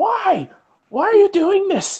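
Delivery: very high, squeaky yelling. Retelling a story where someone is heard yelling: squeaky yelling voice. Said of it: "in this like squeaky voice".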